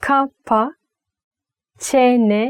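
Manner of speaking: deliberately slow, drawn-out delivery. Teaching a turkish phrase, saying it very slowly. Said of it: "when I say it slowly".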